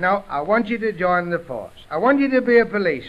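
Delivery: plain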